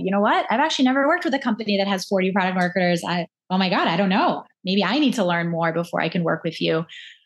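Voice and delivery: ordinary talk, nothing marked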